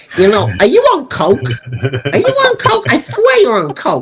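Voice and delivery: odd, high-pitched, swooping, twisted way of talking. Acting out a man interrupting your enthusiastic film pitch, as a Brad Wyman impression. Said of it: "Brad talked like this".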